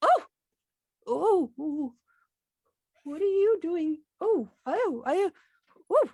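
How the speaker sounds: put-on very loud, high old dwarf character voice. Narrating as a dwarf notices the characters stepping into the room, elderly dwarf voice. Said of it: "the elderly dwarf, I would assume, notices you and goes".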